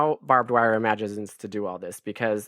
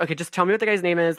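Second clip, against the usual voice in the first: high, frazzled, harried, overworked voice at its limit; 6 semitones higher than usual. Acting out a character as a frazzled mom: imitating a frazzled mom. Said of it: "She's like a frazzled mom".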